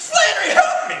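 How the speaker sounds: put-on Irish accent, pitched very high. Retelling how your co-actor jumped back into Irish, imitating Norman's Irish accent. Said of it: "jumping back into Irish after that".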